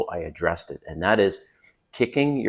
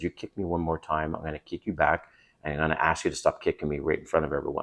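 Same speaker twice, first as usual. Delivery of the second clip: soft, close half-whisper; 3 semitones lower, 7 dB quieter than usual. Retelling a warning said to a partner under the table: retelling a half-whisper. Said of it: "I whispered in her ear".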